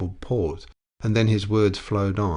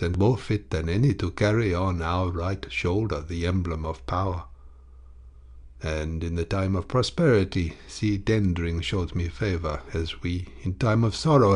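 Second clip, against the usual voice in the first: usual speaking voice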